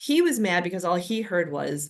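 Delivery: ordinary talk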